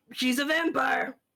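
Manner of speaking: full-on, high, loud shouting. A player speaks as his character, yelling. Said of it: "maybe he's just gonna yell".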